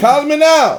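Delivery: very high, very loud, shrill, booming infomercial voice. Speaker jokes that praising the water sounds like an early-2000s infomercial: infomercial voice. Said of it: "sound like a damn infomercial".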